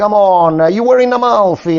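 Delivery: put-on Italian-American accent. Describing how immigrants from the South talked: imitating Southern Italian-American accent. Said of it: "they will talk like this".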